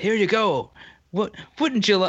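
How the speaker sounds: clumsy put-on Irish accent. Imitating the irish offering alcohol-free beer: attempted irish accent. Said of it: "I can't do an Irish accent right now".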